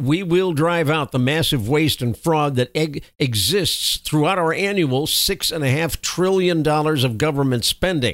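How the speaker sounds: normal talking voice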